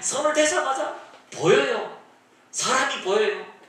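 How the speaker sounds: high, laughing, elated joyful cry.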